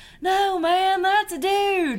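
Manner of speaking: put-on shrill, booming, high, loud Arkansas accent. Retelling a friend's reply to the speaker, in an Arkansas accent. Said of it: "my friend looks at me with her Arkansas accent".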